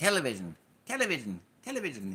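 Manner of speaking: jokey fake British accent, swooping and animated. Joking after talk about having a vision: put-on british accent. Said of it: "in the British accent".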